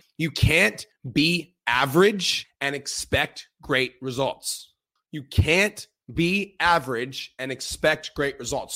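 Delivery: very slow, every word spaced out, deliberate emphasis. Stressing an important point to viewers: super slow. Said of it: "I'm gonna say this super slow".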